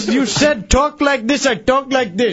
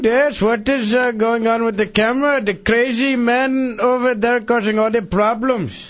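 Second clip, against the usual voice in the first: over-the-top, exaggerated put-on Indian accent. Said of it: "your indian impression".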